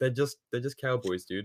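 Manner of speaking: usual speaking voice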